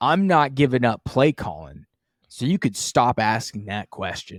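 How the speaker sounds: mock short, touchy, curt and angry defensive tantrum. Retelling a coach's answer after a loss: imitating Brandon Staley, defensive and short. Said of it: "Just very, very defensive, very, very short, angry".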